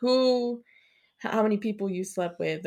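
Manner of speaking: normal talking voice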